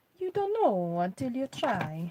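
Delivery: loud, put-on Italian accent. Repeating their own remark just said: Italian accent. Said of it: "I feel I should say that in an Italian accent".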